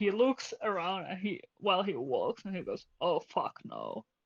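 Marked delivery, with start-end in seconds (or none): 3.0-4.0 very low mutter under the breath. A game narrator voices a character looking around while walking: very low voice. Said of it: "try to say it like very low voice".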